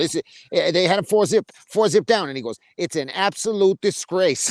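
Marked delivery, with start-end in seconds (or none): 2.8-4.5 put-on Australian accent, outraged, slow and deliberate. Quoting a man reacting to the scorecards: put-on australian accent. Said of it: "the very same way as Ozzy says it".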